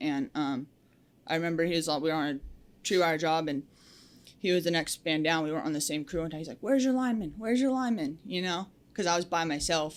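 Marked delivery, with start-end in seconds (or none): 6.6-8.2 mock, high, shouted repeated words. Retelling how another lineman called out from a distance: imitating someone yelling. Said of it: "yelling from no".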